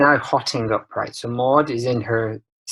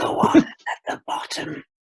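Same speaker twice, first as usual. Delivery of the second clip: incredibly creepy, eerie whisper; 4 semitones higher than usual. Retelling a line from a Simpsons scene: imitating a creepy whisper.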